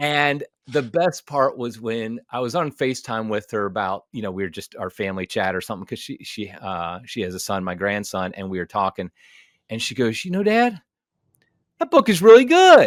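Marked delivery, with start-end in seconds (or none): 10.4-12.9 mock astonished exclamation, very high pitch, loud. A father retells what his daughter said to him on FaceTime, imitating shocked, surprised voice. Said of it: "she said it with the most shocked, surprised voice".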